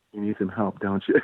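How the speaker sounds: small, soft, quick little voice. Telling how a woman reacted to them, speaker imitates her soft little voice. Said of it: "in her soft little voice".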